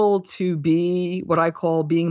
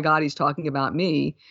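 ordinary delivery

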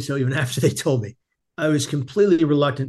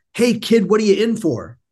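acted cheerful, happy-go-lucky, jovial, pitched up; 7 semitones higher, 3 dB louder than usual. Speaker retells a man walking into his room to greet him, imitating a jovial happy man. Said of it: "he's really jovial and happy".

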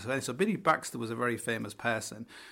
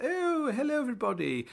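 put-on posh woman voice, very high pitch; 13 semitones higher than usual. Retelling how a woman came in and greeted everybody: posh voice. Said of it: "she's all like posh and stuff".

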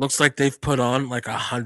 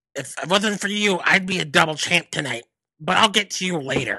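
higher-pitched calling-out voice; 5 semitones higher than usual. Retelling a wrestler calling out Finn after his match: Johnny Gargano voice. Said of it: "My most offensive voice is fucking Johnny Gargano".

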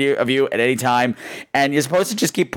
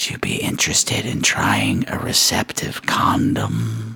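hushed, very slow, drawn-out whisper. Retelling what a stranger asked in their ear: imitating someone whispering. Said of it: "he kind of whispers in my ear".

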